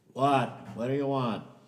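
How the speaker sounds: loud, high shouted call.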